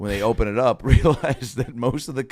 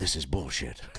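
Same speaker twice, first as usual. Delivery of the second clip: very low, deep-chested, heavy grumbling growl; 7 semitones lower, 9 dB quieter than usual. Doing an impression of Liam Neeson reacting to a guy: Liam Neeson impression. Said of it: "Here's Liam reacting to that".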